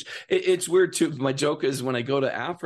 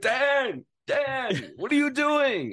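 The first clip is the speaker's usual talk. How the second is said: mock shrill, big theatrical, very high, drawn-out scream; 12 semitones higher than usual. Retelling how the director yelled on set: imitating the director screaming. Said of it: "he'd scream at me".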